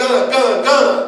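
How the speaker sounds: high, loud yell in alarm.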